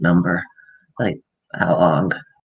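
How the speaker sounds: mock whispering. Describing how a woman at a party barely speaks, imitating her whisper. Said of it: "she's just basically talking in a whisper".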